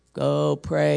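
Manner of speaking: low, mechanical robot voice. Imagining the Holy Spirit giving an instruction to pray; robot voice. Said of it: "except not talking like a robot".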